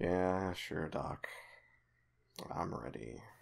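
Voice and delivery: very soft, quiet, downcast and sad voice. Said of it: "you hear kind of a sad voice".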